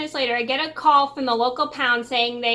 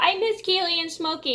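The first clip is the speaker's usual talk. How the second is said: mock high, tearful sobbing through every word; 5 semitones higher than usual. Retelling calling Mom about missing cats, retelling sobbing. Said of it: "I'm like sobbing. I go".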